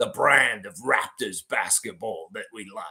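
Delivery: put-on relaxed Australian-accented speech. Quoting the Raptors summer league coach, in a Trevor Gleeson Australian accent. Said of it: "it sounds so cool with his accents".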